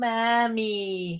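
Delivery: put-on creepy, weird, high, drawn-out plant-baby voice. Retelling a Batman scene where babies in plants call out; creepy plant-baby voice. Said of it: "weird fucked up like babies in these plants going".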